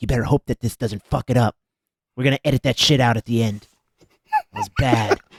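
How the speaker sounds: hushed whisper, under the breath. Pulling aside the man ruining his movie, he warns him; whispering. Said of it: "just whisper to him like".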